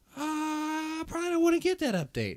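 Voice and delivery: hesitant, high-pitched gamer voice.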